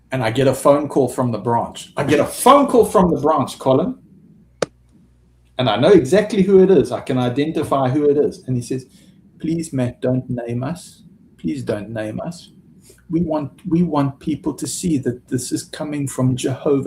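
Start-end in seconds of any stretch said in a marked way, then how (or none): 9.4-16.9 beautiful, gentle, soft and hushed tones. Recounting a phone call from the branch, quoting the caller in soft tones. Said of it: "in soft tones".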